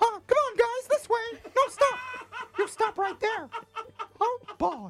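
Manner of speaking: squeaked out, high-pitched and loud. Retelling directing traffic in the street; Mickey Mouse voice. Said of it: "I definitely did the Mickey voice".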